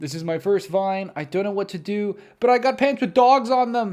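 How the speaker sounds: shrill, very loud put-on American accent. Recalling their first vine video, doing an american accent. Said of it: "in an American accent".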